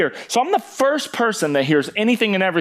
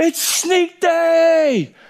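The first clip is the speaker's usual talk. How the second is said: very high shrill yell, day drawn out; 12 semitones higher than usual. Retelling a guy pounding on your door on sneak day, retelling a yell. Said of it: "He yells".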